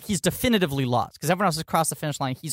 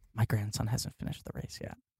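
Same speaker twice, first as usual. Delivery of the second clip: acted, ominous, breathy, scary whisper; 5 semitones lower, 9 dB quieter than usual. Retelling a grandfather's line from a scene: imitating a scary line reading. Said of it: "He doesn't say it as scary as you're making it sound".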